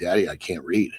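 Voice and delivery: mock sobbing, crying, tearful pleading tone. Retelling the moment his daughter looked at him: imitating a crying daughter. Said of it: "starts fucking crying".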